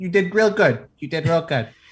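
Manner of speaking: put-on New Jersey accent. Telling how they tapped the Umber Hulk while passing it, in a Jersey accent. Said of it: "my Jersey accent happened there".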